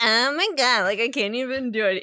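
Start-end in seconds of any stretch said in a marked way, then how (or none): 0.0-1.0 put-on loud, nasal, ditzy valley girl voice. Describing a man's second voice, doing a ditzy nasal Valley girl voice. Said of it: "this weird Valley girl, kind of like ditzy".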